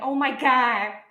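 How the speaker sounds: loud, belted Boston accent, every R dropped. Showing how the accent thickens when excited: thick Boston accent, dropped R's. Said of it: "that thicker Bostonian accent where I start dropping my R's".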